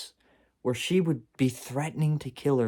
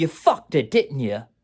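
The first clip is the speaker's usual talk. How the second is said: loud, fake put-on Bronx accent; 2 semitones higher, 6 dB louder than usual. Quoting what she would say to him back then: put-on bronx accent. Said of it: "She doesn't have a Bronx accent".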